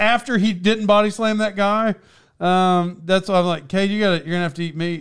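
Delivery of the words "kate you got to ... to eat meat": normal talking voice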